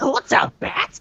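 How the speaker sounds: high-energy put-on cartoon voice. Comparing Joker impressions, doing Mark Hamill's Joker: Mark Hamill's Joker voice. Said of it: "Mark Hamill's Joker ... he's like".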